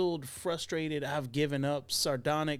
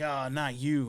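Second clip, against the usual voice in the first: imitated fed-up, irritated cop voice. Retelling a trailer scene, the cop's line: imitating a fed-up irritated cop. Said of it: "she's the fed up, irritated cop".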